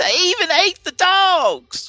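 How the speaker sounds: very high, loud, shrill, drawn-out excited shriek. Voicing a frightened farmer telling of an attack: shrieking. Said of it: "He shrieks".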